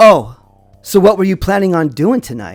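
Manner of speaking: put-on snide, sarcastic, challenging tone. Retelling how a stranger asked about evening plans: imitating a sarcastic question. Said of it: "he sarcastically asked me".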